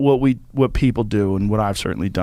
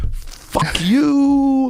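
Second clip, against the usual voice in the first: high, openly mocking jeer. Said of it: "openly mocking me".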